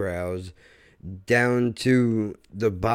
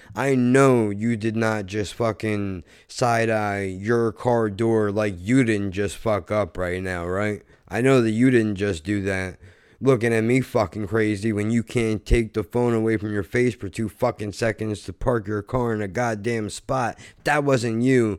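normal talking voice

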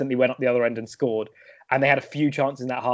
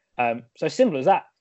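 ordinary talk, nothing marked

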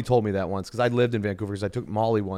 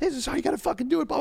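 mock very high, shrill, all-out full-throated yelling. Retelling how someone on set gave instructions: imitating someone screaming. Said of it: "screaming at the top of their lungs".

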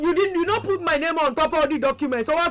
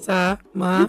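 sugary sweet voice, lower; 9 semitones lower than usual. Answering a caller who asks for a softer tone: sweet voice. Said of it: "That's your sweet voice".

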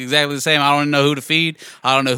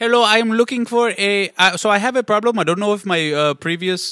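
put-on Indian accent; 6 semitones higher than usual. Playing a caller asking for help in a role-play, fake Indian accent. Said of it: "Should I do like Indian the second one?".

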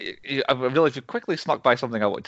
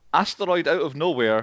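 ordinary delivery

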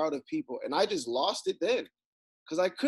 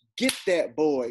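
mock, acted-out goading, cheering tone; 4 dB louder than usual. Retelling a man filming a fight, mock egging on a fight. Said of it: "it was that same type of feeling".

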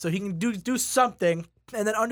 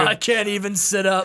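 normal talking voice

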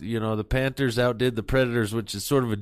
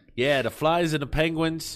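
playful put-on Boston accent; 4 semitones higher than usual. Doing the sports segment in a boston accent. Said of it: "We're going to do it in a Boston accent".

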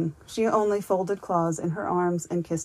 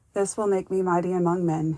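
ordinary delivery

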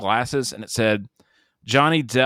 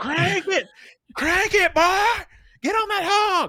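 put-on very high, fired-up, hyped hollering. Recounting what they yelled while watching a scene: retelling own yell. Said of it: "I yelled".

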